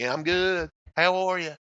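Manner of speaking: folksy Southern accent, put on. Explaining that the Southern accent doesn't appeal: imitating a Southern accent. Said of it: "the Southern accent, I can't get into".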